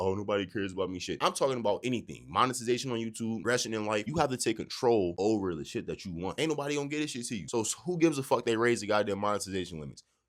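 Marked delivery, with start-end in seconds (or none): 0.0-1.0 mock sad, self-pitying voice. Mocking someone who feels sorry for themselves: mock sad voice. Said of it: "I'm not on no sad".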